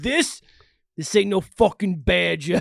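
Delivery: put-on British accent. Quoting a famous last line with the others, a speaker delivers it in a british accent. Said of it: "Perfect British accent".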